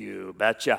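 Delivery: put-on very deep, low, soft, heavy Norwegian accent. Retelling a man's answer to his marriage condition, thick Norwegian accent. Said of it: "in his thick Norwegian accent".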